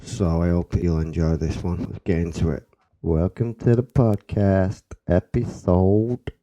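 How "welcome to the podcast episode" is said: loud, slow put-on American accent, intro-style delivery. Opening the podcast episode in an american accent. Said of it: "Don't know why I'm doing that American accent".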